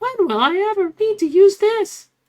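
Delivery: loud, high, squawky bird-like parrot voice. Speaker mimicking a schoolkid's complaint about schoolwork, in a parrot-like voice. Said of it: "Why did I sound like a parrot?".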